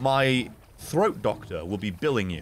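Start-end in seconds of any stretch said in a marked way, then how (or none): none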